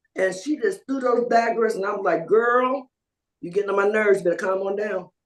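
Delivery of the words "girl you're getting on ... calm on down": normal talking voice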